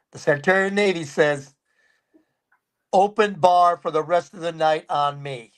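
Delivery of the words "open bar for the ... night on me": usual speaking voice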